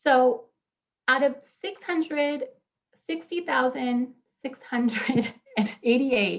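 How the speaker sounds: words breaking up with laughs while speaking. Reading out immigration case numbers, laughing while speaking. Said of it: "I'm laughing".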